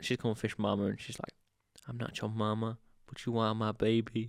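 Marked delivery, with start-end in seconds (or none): 1.9-4.3 put-on sultry, motherly voice. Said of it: "talk all kinda, kinda sexy".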